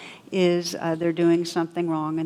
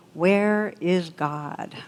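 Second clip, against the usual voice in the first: severe, stern, demanding tone. Telling a joke where a clergyman questions an eight-year-old boy, acting out a stern question. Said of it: "says sternly".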